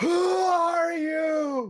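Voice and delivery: all-out, very high, lung-bursting shout, stretching "are". Voicing a character calling out to distant figures: shouting at the top of lungs. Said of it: "he's gonna shout just at the top of his lungs".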